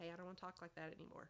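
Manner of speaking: ordinary delivery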